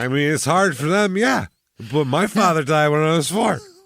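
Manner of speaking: fake drunk voice. Imitating a man who says this in public, in a put-on drunk voice. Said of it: "drunk voice when you're so stuffed up".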